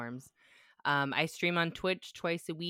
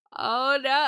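put-on very high, very loud bawling toddler voice; 10 semitones higher, 11 dB louder than usual. Retelling a daughter crying on santa's lap: imitating a crying toddler. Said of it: "she's just crying".

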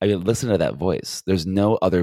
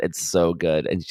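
plain

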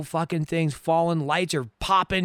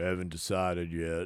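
put-on old cowboy voice, lower and quieter; 11 semitones lower, 12 dB quieter than usual. Repeating a line from the movie being watched: Sam Elliott impression. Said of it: "Was that Rambo?".

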